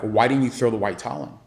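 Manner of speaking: very upset, complaining tone. Retelling parents coming up after the fight, imitating upset parents. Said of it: "parents coming up to me super upset".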